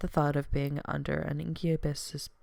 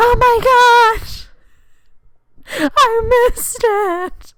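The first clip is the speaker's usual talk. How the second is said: very high, slow, drawn-out panicked wail. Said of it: "I'm like".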